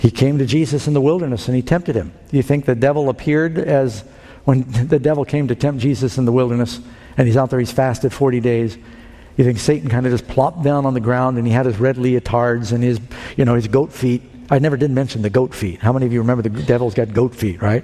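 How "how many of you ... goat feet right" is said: fast, sarcastic aside. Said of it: "I'm being sarcastic".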